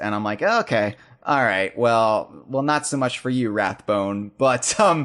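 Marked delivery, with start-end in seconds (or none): none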